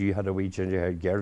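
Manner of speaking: ordinary talk, nothing marked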